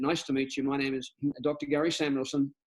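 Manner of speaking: ordinary talk, nothing marked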